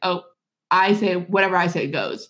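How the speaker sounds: ordinary talk, nothing marked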